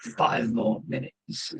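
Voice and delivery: slightly slurred, barely voiced whispered mutter. Narrating a dark corridor in a game, a voice from the darkness: slightly slurred mutter. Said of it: "a slightly slurred voice mutters".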